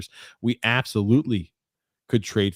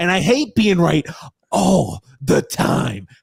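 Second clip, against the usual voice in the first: put-on high, raised, cranky old grump voice; 8 semitones higher, 6 dB louder than usual. Joking after a correct prediction, doing a Grump impression. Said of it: "I'm trying to do my Grump impression".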